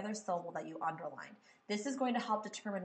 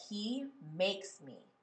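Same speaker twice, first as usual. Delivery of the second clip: slow, with he stressed. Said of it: "I kind of like that".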